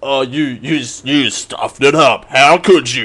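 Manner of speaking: movie trailer announcer narration voice. Quoting someone who interrupted him halfway through a clip; movie trailer man voice. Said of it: "All my impressions are going to be trailer man voice".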